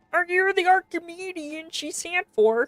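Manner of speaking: high-pitched cartoon puppet frog voice. Reading a character's lines aloud in a put-on Kermit voice. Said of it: "Give him the Kermit voice?".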